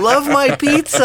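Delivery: put-on very high, eager, excited little child voice. Imitating kids proudly holding up a pizza they made: imitating an excited kid. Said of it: "holding it up with big wide eyes going like".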